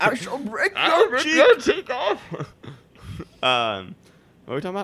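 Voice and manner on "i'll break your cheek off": put-on old villain voice, much higher pitched. Joking about a 90-year-old Bane, one friend answers in old Bane voice. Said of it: "Old Bane".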